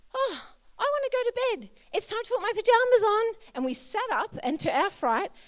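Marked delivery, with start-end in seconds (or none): 0.2-3.4 put-on very high, very loud, tiny cute little-kid voice. Retelling what the child said to them while lying flat, imitating Violet's little voice. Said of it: "this little voice say to us".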